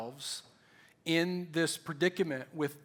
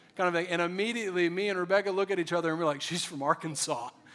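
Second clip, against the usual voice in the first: normal talking voice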